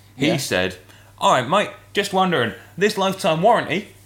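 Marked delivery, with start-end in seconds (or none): 1.2-3.8 put-on thick broad Australian accent, pitched up. Retelling what he said, quoting him in a very broad australian accent. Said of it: "in a very, very broad Australian accent".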